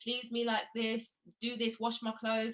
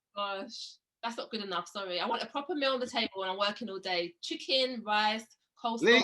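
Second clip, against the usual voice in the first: ordinary talk, nothing marked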